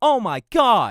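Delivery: sudden, all-out, loud, high-pitched scream. Showing that a scream no longer clips after lowering gain: screaming. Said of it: "if I were to scream".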